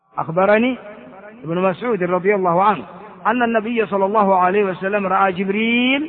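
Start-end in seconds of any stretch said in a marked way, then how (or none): none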